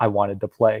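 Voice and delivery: put-on totally deadpan, low, flat, no reaction. Retelling a scene from a TV show, quoting one person's reply: retelling a flat deadpan line. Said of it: "Andrew's just totally deadpan".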